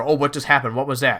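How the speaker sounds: usual speaking voice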